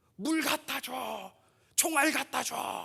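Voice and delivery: high-pitched, rough, rasping cry. Preacher showing the church how soldiers shout on a battlefield, shouting. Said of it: "이렇게 소리 지르는 거예요".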